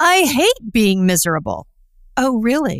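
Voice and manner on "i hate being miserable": put-on condescending, talking-down tone. Retelling how people answer his question about being miserable, mock-condescending reply. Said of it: "Like I'm stupid".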